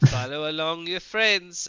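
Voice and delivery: loud, bad put-on Italian accent. Casting a spell with a bonus action, in a terrible Italian accent. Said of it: "I'm saying this in a terrible Italian accent".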